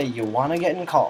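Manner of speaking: plain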